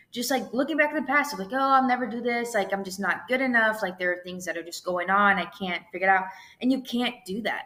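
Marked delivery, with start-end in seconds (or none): none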